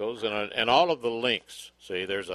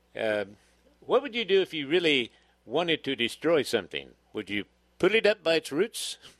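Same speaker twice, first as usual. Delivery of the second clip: silly, high-pitched fake British accent; 5 semitones higher than usual. Putting questions to mr. duke; silly fake british accent. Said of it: "What accent is that".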